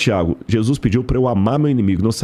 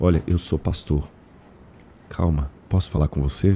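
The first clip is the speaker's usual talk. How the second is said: hushed, gentle, very low, soft, calming voice; 7 semitones lower, 4 dB quieter than usual. A pastor retells approaching an upset girl to calm her, speaking softly. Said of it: "Fui falando baixinho, baixinho".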